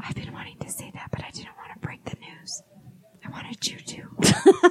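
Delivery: secretive, hushed, very quiet whisper. Teasing news about an upcoming guest to the others, whispering. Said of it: "Why are we whispering?".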